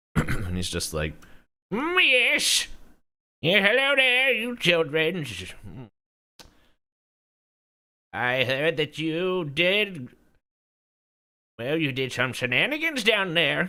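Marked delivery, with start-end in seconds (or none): 1.8-13.7 put-on high, swooping elderly hobgoblin character voice. The speaker voices an older hobgoblin greeting the children: old hobgoblin voice. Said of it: "this older looking um, hobgoblin".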